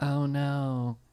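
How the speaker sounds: soft, hushed, barely-there half-whisper. Retelling how she reacts in a zombie movie: Tig Notaro half-whisper impression. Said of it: "Tig Notaro still whispers no matter what's going on".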